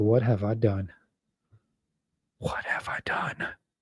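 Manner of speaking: put-on hushed, breathy, remorseful whisper. Imagining the groom after the wedding, voicing him: imitating the groom's regret. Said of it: "he's gonna be like".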